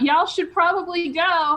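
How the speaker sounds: mild shouted, called-out yell. A character rubs coal and fur before casting darkness, shouting.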